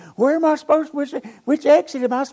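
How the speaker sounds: very high, loud, frantic, panicked screaming. Recalling his GPS cutting out at an intersection: reenacting screaming. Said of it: "I'm screaming at Diane".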